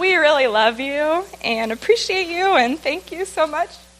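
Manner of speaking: high, tearful, choked-up voice, about to cry. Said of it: "now I'm gonna start crying".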